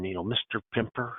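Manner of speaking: very quiet, hushed, prim, proper schoolmarm voice. Speaker imitates an older woman addressing him by name, prim school marm voice. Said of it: "kind of talked like a school marm".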